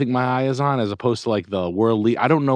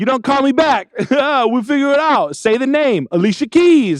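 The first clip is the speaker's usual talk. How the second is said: very high, slow, drawn-out taunting drawl; 13 semitones higher, 4 dB louder than usual. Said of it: "a taunting".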